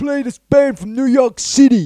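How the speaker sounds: very loud New York mafia mobster accent. Radio host cues up a band from new york city in a new york mafia accent. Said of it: "Is that your New York City accent?".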